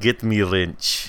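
another variation of a put-on Russian accent. Speaker tries a line in a different russian accent. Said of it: "This is a different Russian accent".

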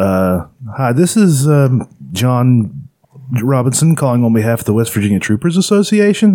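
rising question-like pitch on "Robinson" and "Association". A former training manager imitates a telemarketing trainee's opening line; rising question intonation. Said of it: "it sounds like you're asking a question".

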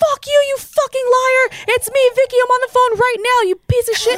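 play-acted shrill, high, loud furious shrieking screams. Retelling a phone call where she blew up at a liar: imitating someone screaming. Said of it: "she started screaming".

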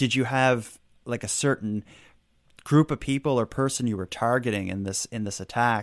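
usual speaking voice

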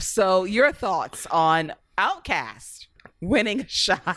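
slow, words broken up by laughter. Asking the others for their thoughts on a win: laughing while talking. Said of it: "You can't even say it without laughing".

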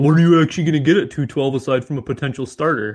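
acted-out derisive, taunting put-on voice. Reading out a commenter's question to the co-hosts, in a mocking SpongeBob meme voice. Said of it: "I said it in the SpongeBob meme voice".

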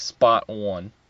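put-on Boston accent. Showing how Boston people say a phrase: Boston accent. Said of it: "they say, like".

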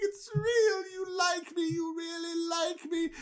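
overjoyed, tearful, very high crying squeal.

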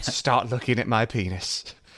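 slow, fake, laid-on, bad British accent. Quoting a character's entrance line: bad british accent. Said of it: "for all the bad British accents".

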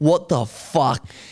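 play-acted, tipsy, angry blowing-up outburst. Retelling his girl coming home and blowing up at him: imitating Courtney blowing up angrily. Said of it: "She comes home blowing up at me".

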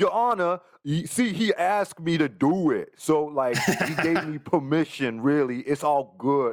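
put-on Queens street guy voice. Speaker imagines the robber addressing a judge in court, in Queens Street Guy voice. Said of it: "an impression of me?".

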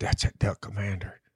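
hushed whisper. Retelling what a buddy said about him: imitating a whisper. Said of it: "his buddy whispered to him".

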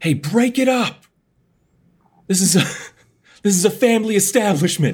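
shrill, very high, loud yell. Yelling at vampires attacking the bartender: yelling to break up fight. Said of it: "just yell out".

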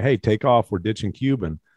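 normal talking voice

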